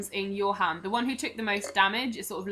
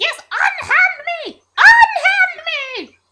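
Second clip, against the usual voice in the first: shrill, very high, very loud, very slow drawn-out yell; 14 dB louder than usual. Narrator voices the one held in the listener's right hand as it is lowered, shouting. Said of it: "trying to biff you and shouting".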